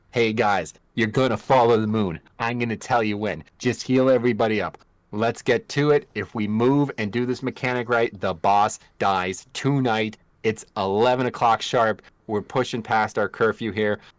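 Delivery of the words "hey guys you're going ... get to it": plain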